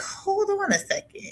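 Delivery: high, distant, startled realization, stopping abruptly. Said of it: "I was like".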